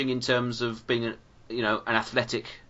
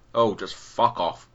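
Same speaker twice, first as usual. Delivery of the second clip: very slow, deliberate, each word dragged out; 2 semitones lower than usual. Imagining an actor snapping at the director: Christopher Lee voice. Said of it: "imagine Christopher Lee just looked at the script".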